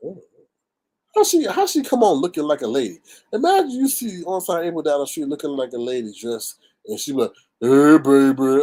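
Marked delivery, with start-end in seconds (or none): 7.6-8.6 very loud, deep, belted voice. Imagining someone greeting a passerby on the street: imitating Onside April's deep voice. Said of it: "I hope not as deep as Onside April".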